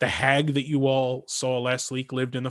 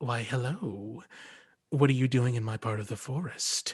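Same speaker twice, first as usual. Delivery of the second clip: soft, smiling feline voice; 6 dB quieter than usual. A narrator voices a cat that turns to the listeners: smiling cat voice. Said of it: "gives like a, a feline smile and says".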